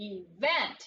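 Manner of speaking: event with stress on second syllable vent. Reading a word aloud to show syllable emphasis: stress on second syllable of 'event'. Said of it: "putting the emphasis or the umph on the second syllable".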